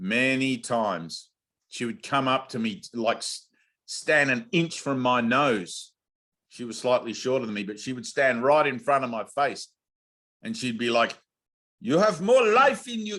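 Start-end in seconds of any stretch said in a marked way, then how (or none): 11.8-13.2 very high-pitched, bad put-on Dutch accent. Retelling how a woman stood right in their face urging them, in a put-on Dutch accent. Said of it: "I don't do a good Dutch accent".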